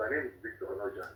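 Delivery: faint voice.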